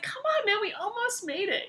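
high, exasperated voice. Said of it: "I was like".

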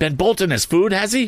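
crying out, very high pitched. The narrator's sister cuts in on Joe's remark about the boy, crying out. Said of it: "cried my sister".

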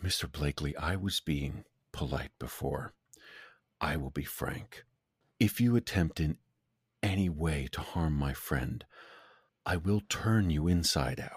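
hushed, close, leaned-in whisper. In a role-play game, the character leans in close to a man: whisper. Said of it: "I'll lean in and just kind of whisper".

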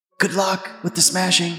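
whispering. Whispering a message into a phone in character: whispering. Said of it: "I'm gonna whisper".

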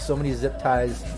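ordinary delivery

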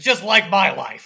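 cartoon old-uncle character voice. Retelling a cartoon character's line in conversation, in a Grunkle Stan voice. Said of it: "That was a good that was a good Grunkle voice".

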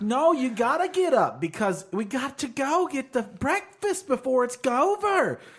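put-on high, loud, nagging, bickering old lady voice.

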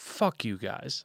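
low grumbling mutter under the breath. Speaker recounts what someone said during a meeting, retelling muttering under breath. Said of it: "under his breath".

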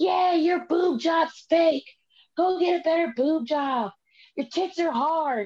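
put-on high-pitched screaming voice. Retelling a fan heckling from the nosebleed seats: imitating someone screaming. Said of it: "just screaming".

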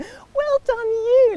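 put-on very high, condescending, patronising praising tone. Retelling own past words to a fan who recognised them: imitating own patronising tone. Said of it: "pat on the head".

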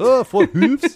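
put-on Scottish accent, very high and squeaky. Joking that hoof is fun to say: Scottish accent. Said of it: "fun thing to say to Scottish accent".

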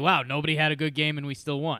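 ordinary delivery

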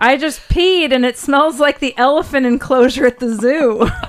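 mock loud, high hollering. Sharing a quote with the others for the show: retelling a yell from the bathroom. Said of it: "It was yelling from the bathroom".

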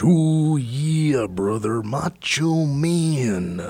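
very slow, drawn-out promo voice, leaning on "Man". Doing a quick impression while talking about wrestler voices: Macho Man Randy Savage impression. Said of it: "Macho Man Randy Savage".

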